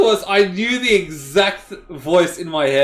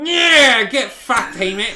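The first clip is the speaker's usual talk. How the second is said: aggressive, angry, rough trucker voice; 3 semitones higher than usual. Told to bring it up strong, a speaker tries a voice, angry truck driver voice. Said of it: "I just sound like an angry truck driver".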